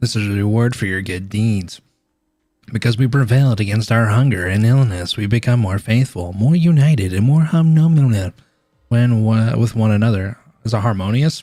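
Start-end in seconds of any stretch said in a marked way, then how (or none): 0.0-10.4 scary, menacing priest voice. Reading game dialogue aloud, voicing the scary-looking priest. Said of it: "that's what he sounds like".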